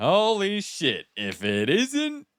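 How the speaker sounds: very high, very slow, swooping sarcastic drawl. Showing how a scene line could be read: sarcastic reading. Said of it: "I could read that "holy shit" as a sarcasm".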